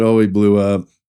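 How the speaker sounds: normal talking voice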